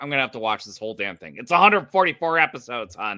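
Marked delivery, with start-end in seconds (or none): none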